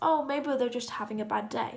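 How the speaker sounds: ordinary talk, nothing marked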